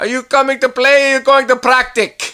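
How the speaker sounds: put-on old Italian man's voice, very high and very loud. Recalling a guy at the golf club, the speaker imitates an old Italian man. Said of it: "He's a wonderful old Italian guy".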